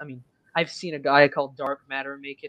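plain

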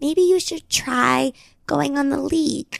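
sugary, sweet, slow, gentle voice. Retelling a sister's dating advice, imitating sister's sweeter voice. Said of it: "we do this voice because she does have, like, a sweeter voice".

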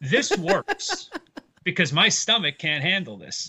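laughing through the words. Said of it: "And I was like".

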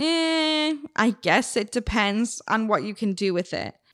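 slow, awkward delivery with drawn-out "I". Retelling your own reply to a guy's unexpected question, retelling an awkward tone. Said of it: "in an awkward tone".

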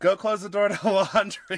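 bossy, hollered, yelled delivery. Describing a woman who yells at the set, acting out her yelling. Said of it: "she's like yelling at the set".

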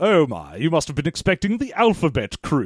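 put-on, generic British evil-guy villain accent. Two speakers riff on an evil guy voice they do: generic British evil guy voice. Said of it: "The more we do this evil guy's voice".

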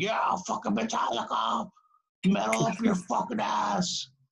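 put-on drunken screaming. Retelling how a drunk concertgoer in the crowd kept yelling: imitating a drunk guy screaming. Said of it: "he kept screaming".

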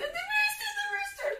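acted scream. Recounting being scared and running back to family, retelling a scream. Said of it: "and I'm screaming".

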